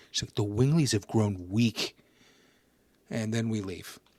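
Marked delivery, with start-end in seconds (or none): 0.3-1.9 put-on mean whisper, lower. Retelling a game scene, a character whispering in a collapsed brother's ear: retelling a mean-girl whisper. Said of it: "whispers in his ear in like the fucking meanest, like mean girl".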